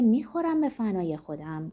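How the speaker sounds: plain reading voice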